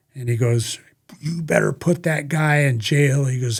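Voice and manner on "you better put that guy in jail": put-on furious voice, angry outburst. Retelling what an angry lieutenant said at the interview room window: imitating someone furious. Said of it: "he's blowing up".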